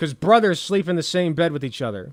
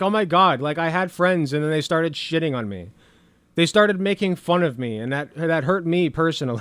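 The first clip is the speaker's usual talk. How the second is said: usual speaking voice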